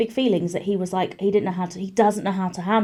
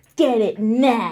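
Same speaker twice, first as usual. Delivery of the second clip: furious, angry voice, stretching out the word "now". Retelling his tantrums, said right in the face: imitating someone angry. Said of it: "being really angry and being like".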